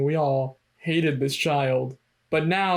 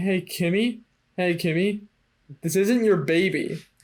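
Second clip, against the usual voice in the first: ordinary talk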